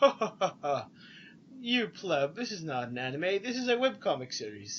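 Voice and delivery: mock pretentious, superior, slow, snooty condescending tone. Retelling what cosplaying fans said when asked their anime: imitating pretentious fans. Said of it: "they were very pretentious to be like".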